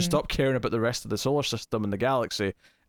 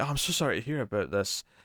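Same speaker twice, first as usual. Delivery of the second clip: mock coy, innocent tone; 4 dB quieter than usual. Retelling a scene where a character plays coy: imitating someone playing coy. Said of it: "G'Kar's playing very coy".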